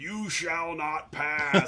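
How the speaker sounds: drawn-out, slow, authoritative delivery. Retelling a film scene where a character slams down a walking stick: retelling a Gandalf yell.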